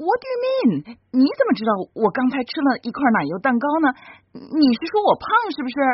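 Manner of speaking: agitated outburst.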